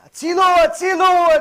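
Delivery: piercing, very high, very loud shrill scream. Retelling a man who fell into the water: imitating someone screaming. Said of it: "Starts screaming".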